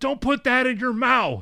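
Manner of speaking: high loud sharp call.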